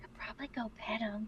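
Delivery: very quiet, very soft, barely-there whisper. Whispering in character into a child's ear, urging him to pet the cat: whispering. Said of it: "hover at the ear and whisper".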